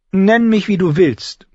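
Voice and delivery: supercilious, smug, haughty, very high-pitched voice. Sansa answers Arya, who just called her a liar: haughty. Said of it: "erwiderte Sansa blasiert".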